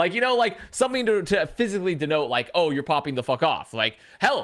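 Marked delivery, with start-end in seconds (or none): none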